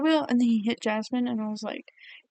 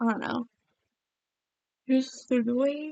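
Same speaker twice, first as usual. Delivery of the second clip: speaking through a yawn; 3 dB quieter than usual. Giving opinions on characters they found annoying, yawning. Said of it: "Sorry, I'm yawning".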